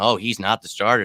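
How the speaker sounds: normal talking voice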